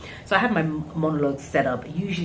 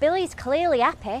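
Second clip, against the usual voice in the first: very high, put-on Yorkshire accent; 11 semitones higher than usual. Telling about an audition, showing the accent they had to do: yorkshire accent. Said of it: "it sounds like this".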